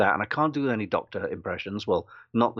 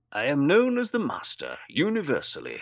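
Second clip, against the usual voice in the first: posh voice, pitched much higher; 5 semitones higher than usual. Recounting an audition, voicing the Master's line in a posh Roger Delgado voice. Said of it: "I just hear myself doing a posh voice".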